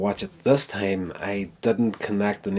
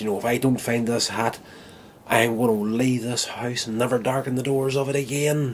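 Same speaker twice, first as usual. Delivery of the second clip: put-on all-out ranting, higher pitch; 3 semitones higher than usual. Telling a story, the speaker quotes a husband hunting for his hat, retelling an all-out rant. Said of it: "still giving it death".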